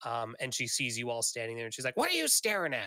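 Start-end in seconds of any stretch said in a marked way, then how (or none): 1.9-2.9 furious, shrill, angry shouting and cursing. The narrator voices a woman at a window, angry yelling. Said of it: "she's just yelling and cursing".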